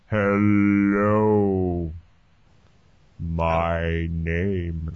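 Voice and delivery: extremely slow, low, drawn-out slow-motion speech. Trying out how a conversation in super slow motion would sound, super slow-motion speech. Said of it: "conversation in like super slow-mo".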